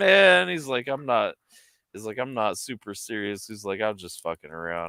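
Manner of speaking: plain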